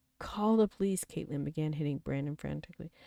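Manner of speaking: plain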